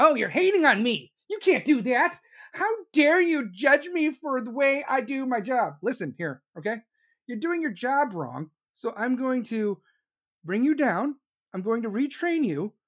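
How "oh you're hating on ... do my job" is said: high voice of the younger generation. Imitating this generation reacting to criticism: imitating this generation. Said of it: "this generation calls it hating".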